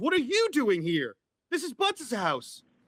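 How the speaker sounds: genuinely very friendly, welcoming, swooping sing-song tone. Voicing the character Mitch greeting Pennywise: very friendly tone. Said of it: "in a very, like, friendly tone".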